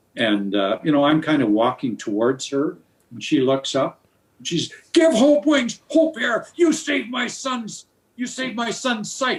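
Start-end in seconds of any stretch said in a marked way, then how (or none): 5.0-9.4 mock screaming at top of lungs, much higher and slower. Speaker retells a cashier looking up at him, imitating her screaming. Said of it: "she's screaming at the top of her lungs".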